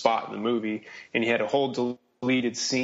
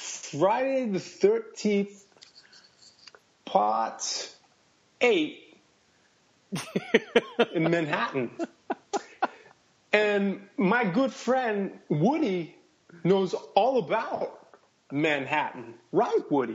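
put-on voice, pitched very high, swinging wildly, sing-song; 9 semitones higher than usual. Answering a request to describe a Friday the Thirteenth movie: Christopher Walken impression. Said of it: "I'll start with Christopher Walken".

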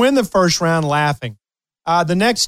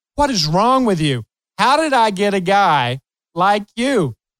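mock sarcasm, cracking up laughing through it; 3 semitones higher than usual. Retelling teasing him on the way to practice: retelling talk while laughing. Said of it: "I'm cracking up laughing".

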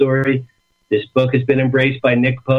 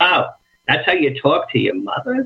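imitated harsh Brooklyn voice; 4 semitones higher than usual.

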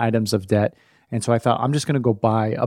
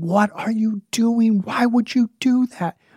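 mock very high, all-out enraged, furious scream; 11 semitones higher than usual. A father retelling losing it at her in front of his son, retelling an angry scream. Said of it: "I just screamed".

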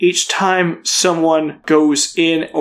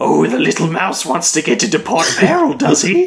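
big, swooping cat-creature character voice. Voicing a hooded tabaxi who kneels down to a player: tabaxi cat-creature voice. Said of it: "He's like".

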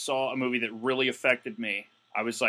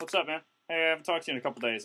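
put-on chatty voice, higher; 4 semitones higher, 4 dB quieter than usual. Retelling how an acquaintance greets him: imitating Basketball Dave. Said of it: "it's like".

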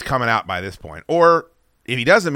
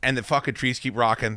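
ordinary delivery

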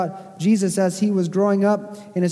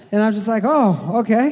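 ordinary talk

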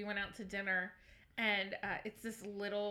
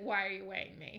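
fake tearful, crying voice. Imagining another speaker crying at a doctor: mock crying while asking. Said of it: "You'd cry and be like".

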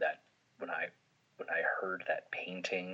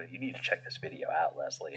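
ordinary talk, nothing marked

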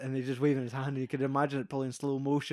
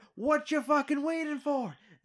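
very high-pitched, impatient shouting; 13 semitones higher than usual. Retelling a scene where a man bangs and shouts at another guy, retelling a shout. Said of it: "shouting at the guy".

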